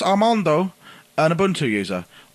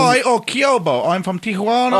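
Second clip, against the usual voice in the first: ordinary talk, nothing marked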